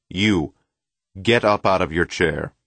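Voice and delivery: authoritative tone. A lecturer suddenly points at someone in the front row and demands in a commanding voice. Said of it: "in a commanding voice demand".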